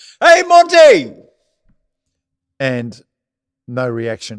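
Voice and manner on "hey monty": shrill, very loud, high-pitched shout. Retelling a crowd member calling to a golfer: imitating a heckler yelling. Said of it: "this bloke yells out".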